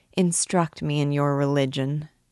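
ordinary delivery, nothing marked

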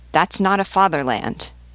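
ordinary delivery, nothing marked

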